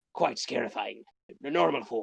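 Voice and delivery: put-on pirate voice.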